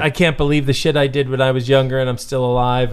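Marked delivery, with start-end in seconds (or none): none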